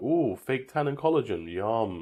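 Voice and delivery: slow, hungry shark voice. Joking about what a shark thinks of humans: voicing a hungry shark. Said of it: "That shark's just like".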